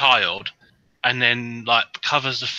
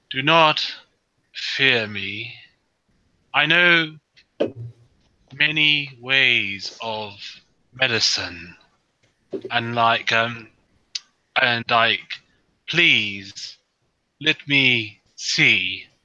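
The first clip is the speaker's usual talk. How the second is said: very slow, halting, broken speech. Speaking in character to people guarding an injured child, very slow broken Common. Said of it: "I sort of speak very very slowly uh, in broken common".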